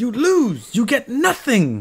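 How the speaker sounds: high, slow, laughing outburst, fired off high. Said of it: "is from Willy Wonka".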